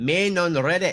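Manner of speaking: best-effort put-on Scottish accent. Reading a Reddit question aloud on request, in a Scottish accent. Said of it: "read this question in your best Scottish accent".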